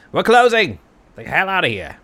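very loud, shrill, swooping yell. A game narrator voices a character yelling at the patrons: yelling. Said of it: "he yells at some of the patrons".

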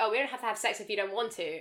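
ordinary talk

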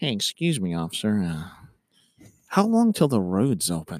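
easygoing, slow, casual drawl, very low, swooping. Officer retelling a citizen strolling up to ask about the closed road: imitating a slow casual bystander. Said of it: "It's real slow and casual".

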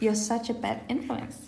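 normal talking voice

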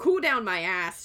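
play-acted, slow, grouchy grumbling complaint. Retelling a book scene in the character's words: imitating Nesta grumbling. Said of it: "she's grumbling".

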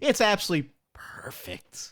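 heavy, dripping sarcasm, pitched high. Mocking claims that New York is safe: sarcastic. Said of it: "I am being sarcastic".

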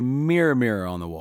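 usual speaking voice

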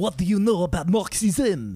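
failed, bad French accent. Imitating a man who sounded mad asking them a question, failed accent, sounds French. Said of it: "It's always some version of French".

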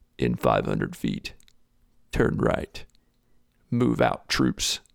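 gruff low slow voice. Describing a navigation voice option in a game, Master Chief GPS voice. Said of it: "this very gruff, rough voice will be like".

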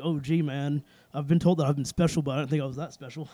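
ordinary delivery

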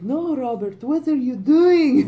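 high, slow, laid-on put-on Scottish accent. Retelling a story from a podcast, imitating a mother in a scottish accent. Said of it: "his mother's like Scottish all of a sudden".

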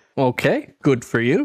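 ordinary talk

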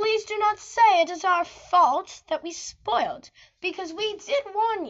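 put-on British accent.

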